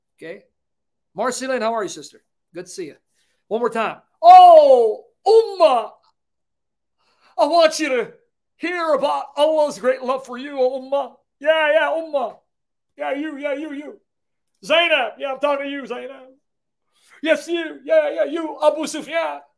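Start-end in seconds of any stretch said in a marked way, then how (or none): 4.2-19.4 put-on slow Southern preacher voice, drawn-out "oh". Speaker repeating an imitation of Southern preachers, Southern preacher imitation.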